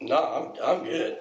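put-on drunk speech. Retelling answering another resident assistant at the door: imitating own drunk speech. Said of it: "Are you drunk?".

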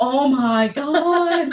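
slow, laughing, disbelieving oh my god.

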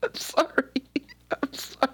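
very high voice, giggling through the words. Reacting to a grim story another speaker tells, laughing while talking. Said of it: "Is it inappropriate that I'm laughing?".

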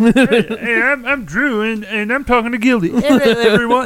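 high-pitched put-on kid voice. Doing an impression of Drew for the other speaker: imitating Drew's voice. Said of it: "that was my Drew voice".

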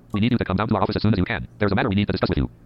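ordinary talk

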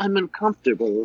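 small, little, soft-spoken voice. Retelling how someone in an awkward moment spoke: imitating a little soft voice. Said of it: "he had that little soft voice".

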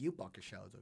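plain

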